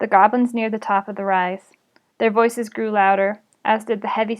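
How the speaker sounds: ordinary delivery, nothing marked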